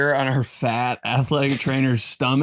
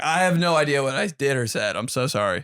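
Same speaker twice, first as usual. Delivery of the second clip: ordinary delivery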